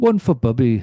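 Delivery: put-on poorly done, failed Irish accent. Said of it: "I can't do an Irish accent".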